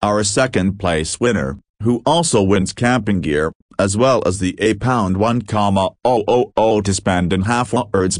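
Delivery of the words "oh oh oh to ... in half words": plain reading voice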